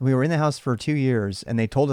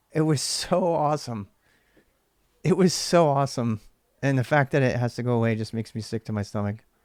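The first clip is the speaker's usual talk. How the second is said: choked up, voice catching, close to tears. Looking back at photos of the game nights: on the verge of tears. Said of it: "God, I'm gonna cry".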